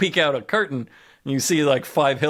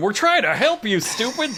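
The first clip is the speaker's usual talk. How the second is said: high, loud yell; 9 semitones higher than usual. Retelling how someone yells after a man running away: imitating a yell. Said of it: "Wild Bill yells after him".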